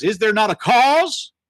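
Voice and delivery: aggressive, upset outcry. Retelling David's challenge about the giant, imitating David's angry outburst. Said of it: "how upset and aggressive and angry he was".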